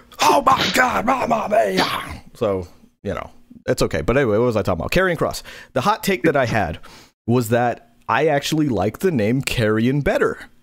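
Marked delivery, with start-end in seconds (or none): 0.2-2.2 drawn-out, stretched, high, smooth delivery. Imitating the commentator's call this week: smooth Mauro Ranallo impression. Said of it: "the smooth Mamma Mia of Mauro Ranallo".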